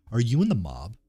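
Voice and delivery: ordinary talk, nothing marked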